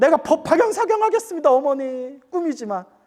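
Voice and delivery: weeping, tearful voice breaking with tears. Retelling a son calling to his mother after a dream: imitating someone crying. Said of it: "하면서 막 울면서".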